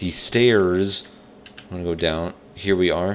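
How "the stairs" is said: loud put-on American accent. Speaker narrating going down the stairs, in a put-on american accent. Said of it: "That's my American accent right there".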